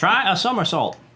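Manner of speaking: put-on very high, loud southern accent. Commenting on a game puzzle: Peppy southern accent. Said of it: "You sounded like a southerner".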